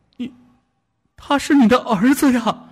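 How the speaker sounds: very high, shaking, frightened, trembling voice. Narrating a story, a wife grabs her husband's shoulder and speaks: trembling voice. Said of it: "声音颤抖地说".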